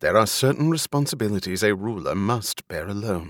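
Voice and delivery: ordinary delivery, nothing marked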